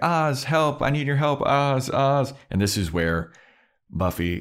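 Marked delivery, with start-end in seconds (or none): 0.0-2.3 high-pitched desperate scream. Retelling a Buffy scene, imitating Willow screaming for help. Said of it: "she is running around screaming like".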